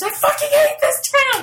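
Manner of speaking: very high, shrill, loud all-out scream. Describing a movie scene, the speaker retells a character's scream. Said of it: "he literally just screams".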